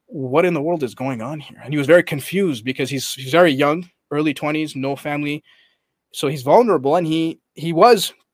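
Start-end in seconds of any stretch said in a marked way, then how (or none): none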